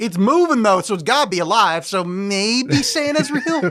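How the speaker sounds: odd, weird, put-on Southern US accent. Voicing imagined characters' reasoning about an animatronic Santa, weird southern accent. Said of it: "like a weird southern accent for no reason".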